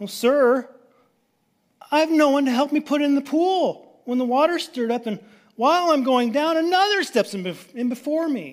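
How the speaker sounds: very high, whining, pleading tone. Retelling the sick man's answer to Jesus, imitating a whiny voice. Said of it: "just hear the whine in his voice".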